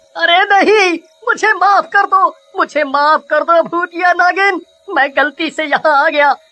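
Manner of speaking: terrified, panicked, frightened pleading tone. A goldsmith caught by a ghostly snake-woman begs her to spare him: panicked pleading for mercy. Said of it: "मैं खुद एक सुनार हूँ, / [name] हीरे बटोर ही रहा होता है कि इतने में [name] के पीछे खड़ी हुई लड़की एक भूतिया नागिन का रूप ले / ब, ब, ब, ब, बचाओ बचाओ। आ, आ, आ, अरे तु, तु, तु, तु, तुम कौन हो?".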